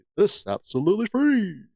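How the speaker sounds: radio announcer delivery. A video host asking viewers to subscribe repeats it in a radio dj voice. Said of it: "Which I sound like a radio D J".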